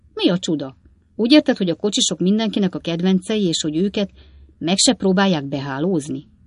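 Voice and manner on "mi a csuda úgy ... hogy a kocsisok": plain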